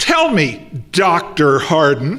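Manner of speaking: slow, swooping, openly disdainful tone. Quoting a fuming audience member addressing the speaker, mock disdain. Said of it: "they always say it like that, with a disdain".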